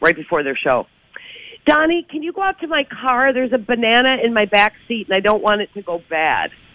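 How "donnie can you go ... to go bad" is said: play-acted broadcast voice, loud and carrying. Retelling what Julia said to Donnie before a show: imitating Julia saying it loudly. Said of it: "I heard Julia say really loudly".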